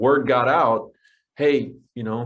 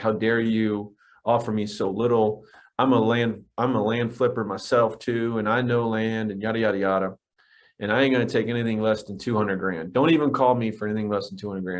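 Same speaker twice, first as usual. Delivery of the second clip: usual speaking voice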